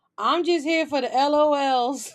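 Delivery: imitated drunk woman's voice. Retelling what a guest said at a Zoom meeting: imitating a drunk woman. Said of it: "she was drunk eating fried chicken".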